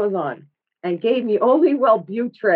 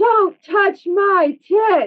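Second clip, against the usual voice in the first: acted full-throated, high, drawn-out scream; 10 semitones higher, 4 dB louder than usual. Retelling what they screamed as cops patted them down, retelling a top-of-lungs scream. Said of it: "and I just scream".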